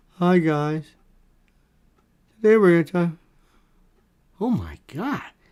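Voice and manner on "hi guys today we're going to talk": put-on boring, dull, lifeless delivery. Mocking boring people who have no life in them, imitating a lifeless voice. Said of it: "they have no life in them. And they talk like that".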